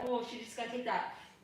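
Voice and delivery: ordinary delivery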